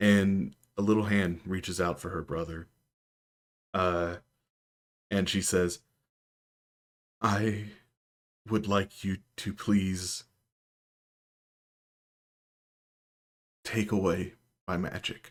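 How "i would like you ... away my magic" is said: slightly trembling, quavering voice. Annie, reaching for her brother, answers her great lady, voice trembling a bit. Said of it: "voice kind of trembles a bit".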